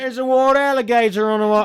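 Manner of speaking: put-on loud, high-pitched shouted Australian accent. Acting out a Floridian in a bit about Florida, in an Australian accent. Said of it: "that's an Australian accent".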